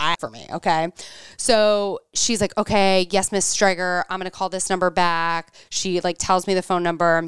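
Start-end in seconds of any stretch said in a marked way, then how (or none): none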